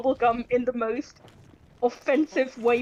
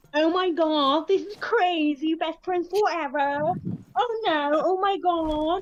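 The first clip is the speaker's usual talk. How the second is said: exaggerated American accent, pitched up; 5 semitones higher than usual. Speaker showing how Germans think Americans sound, doing a German stereotype of American accent. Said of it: "a very stereotypical like what a German thinks American accents sound like".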